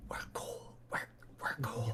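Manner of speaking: very quiet, breathy, reassuring whisper. As an archer asks who they are, the character speaks to him, whispering. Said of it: "I'm just gonna whisper to him".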